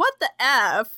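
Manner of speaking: plain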